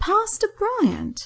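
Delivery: very high-pitched, astonished and amazed. Narrator reads Sue saying the pastor's name as Andrew sits down, quiet and amazed. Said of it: "Sue said quietly, with some amazement in her voice".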